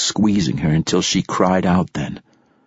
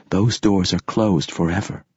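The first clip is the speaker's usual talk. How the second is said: plain reading voice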